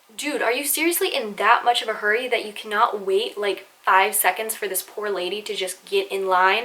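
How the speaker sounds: normal talking voice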